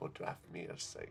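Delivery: very soft, breathy, barely voiced whisper. Game narrator voicing a woman who is not human, whispering to a player. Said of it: "She whispers to you".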